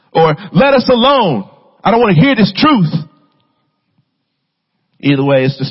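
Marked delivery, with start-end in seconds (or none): 0.6-3.0 acted, rude, very high-pitched indignant yell. Speaker acting out a demon's outburst at Jesus: retelling a yell. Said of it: "He yells it".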